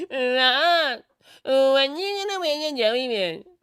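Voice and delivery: very high, loud, slow put-on voice, one word drawn out. Mimicking the paper bag boy again, super high-pitched imitation. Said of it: "Such a super high pitched voice".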